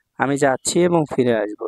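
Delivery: ordinary delivery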